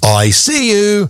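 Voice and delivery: tiny, very high, squirrel-like shout. Explaining squirrel alarm calls on the radio, voicing a squirrel: tiny shouting squirrel voice. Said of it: "A tiny voice shouting".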